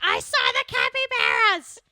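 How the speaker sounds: unflattering caricature, very loud, very slow, high, swooping. Imagining how a woman will react to hearing this episode, do an inaccurate impersonation of her. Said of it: "I impersonated her like that".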